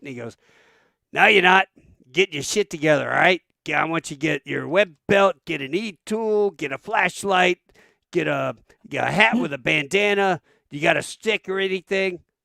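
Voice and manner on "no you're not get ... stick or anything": put-on Boston accent, higher and louder. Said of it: "he's from Boston, and no shit, talks like".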